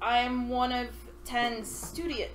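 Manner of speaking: plain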